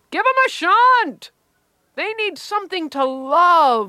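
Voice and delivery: high, slow, loud yelled-out call. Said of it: "Mike would yell out".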